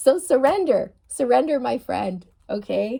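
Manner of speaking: talking through laughter. Urging viewers to surrender: laughing while talking. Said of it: "I'm laughing because I know what this is like".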